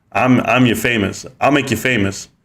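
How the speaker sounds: plain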